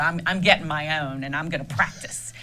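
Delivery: normal talking voice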